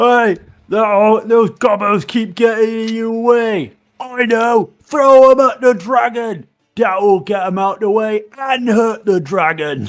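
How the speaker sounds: very high, loud giant character voice. A player calls out to a giant, doing an impression of a giant. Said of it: "trying to do my best impression of a giant".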